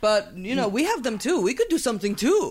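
put-on Russian accent. Retelling Russia's vague threats to retaliate, the speaker talks in a Russian accent. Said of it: "Doing it good".

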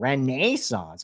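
Rochester-style speech. Comparing how people say Renaissance there: nasal Rochester accent Renaissance. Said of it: "That's basically a Rochester accent. my nasally accent right there".

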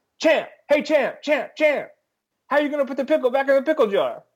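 put-on very high, fast, rattled-off vintage sports-reporter accent. Retelling a news conference after a 30-point loss, old-timey reporter accent. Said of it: "the old-timey sports reporter comes on in his accent and goes".

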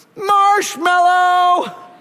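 put-on high, slow, drawn-out little kid yell.

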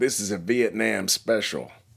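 put-on Southern drawl. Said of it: "a gentleman with a southern accent".

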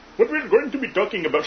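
put-on Indian accent. Host opening a roundtable discussion when someone calls out an accent: indian accent. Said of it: "Indian accent!".

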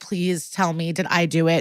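mock heavy breathing and crying, pleading. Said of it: "she's breathing really heavy and crying".

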